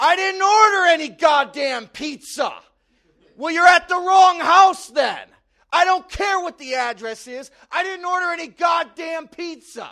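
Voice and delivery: very high, very loud, shrill screaming. Retelling how a neighbor screamed at the pizza guy: imitating a screaming neighbor. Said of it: "I heard Larry screaming downstairs".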